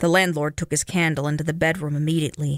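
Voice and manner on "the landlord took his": plain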